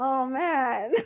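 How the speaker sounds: high, fake-tearful little pet voice. Voicing a pet cat who was bapped in the face, in a mock tearful voice. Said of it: "have tears going in his eyes".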